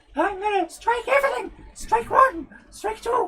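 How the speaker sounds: talking while breathing in, squeaked high. Joking about a copyright strike, in a Mickey Mouse voice on inhale. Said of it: "You're talking whilst you're breathing in".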